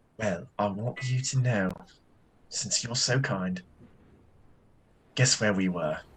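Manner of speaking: soft, secretive, pure half-whisper. A character calls a woman close and speaks toward her ear, half-whispering. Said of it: "he can whisper towards her ear".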